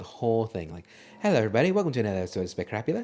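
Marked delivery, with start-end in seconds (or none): 1.2-3.0 fast, put-on British accent. Podcast host trying out a british voice for the episode intro, in a put-on british accent. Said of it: "Maybe I'll do a British voice".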